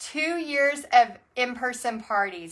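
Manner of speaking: normal talking voice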